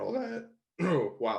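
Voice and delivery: voice breaking mid-sentence, cracking. Talking about getting over freezing in front of a classroom, voice cracking. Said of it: "voice crack".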